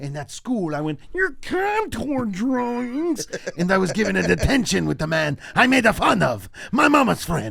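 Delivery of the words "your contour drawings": teasing, mocking voice, pitched up. Retelling the school impression that earned a detention, making fun of Mister Warren's voice. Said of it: "doing his, his voice".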